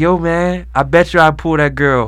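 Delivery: put-on Jamaican accent. Retelling a dude who came up to him one night, Jamaican accent. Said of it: "like a Jamaican accent".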